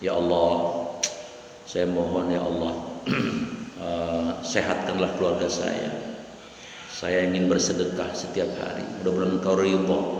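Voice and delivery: soft, low, private murmur. A preacher shows how to pray only to allah, soft quiet prayer. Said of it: "Ngomongnya pelan-pelan".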